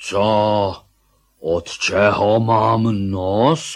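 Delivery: loud protesting shout. A bear shouts back at someone questioning him about a faraway uncle, shouting. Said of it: "nekřič".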